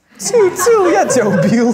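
very high, loud mock Korean-style shooting sounds.

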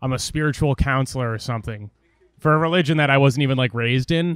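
usual speaking voice

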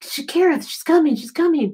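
mock yelling. Speaker recounts their husband yelling at them, retelling husband's yell. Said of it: "He's yelling at me going".

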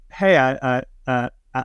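plain

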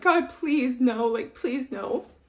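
put-on, acted-out mock pleading tone. Retelling yelling to God about the dogs, acting out pleading. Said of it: "Like pleading with God that my dogs aren't shot".

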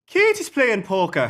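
attempted Irish accent. Asked whether they can do an Irish accent, the speaker tries one: Irish accent. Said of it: "Can either of you do an Irish accent?".

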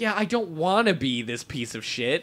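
usual speaking voice

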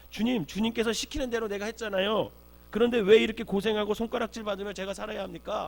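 loud, high-pitched protest. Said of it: "이렇게 따지는 거죠".

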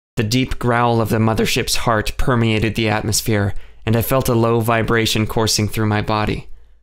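ordinary delivery

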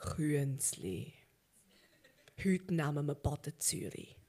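very deep, very low villain voice. Imagining him calling over one of his lackeys: deep voice. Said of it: "mit tiefer Stimme sagt".

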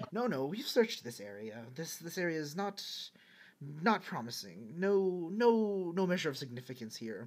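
mumbled, muttered self-talk. Voicing someone talking to themselves in the back of the room: mumbling to self. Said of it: "talking to themselves, mumbling".

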